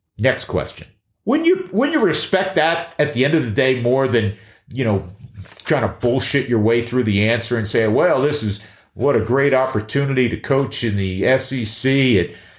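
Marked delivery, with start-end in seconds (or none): 7.9-12.3 put-on drawling Southern accent. Acting out a coach's answer to a question, in a southern drawl. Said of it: "I'm already leaking into a Southern drawl again".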